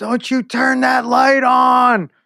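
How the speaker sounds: put-on very high, very slow, drawn-out scream. Retelling waking from a nap to a child entering: retelling screaming at a child. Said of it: "I just start screaming at him".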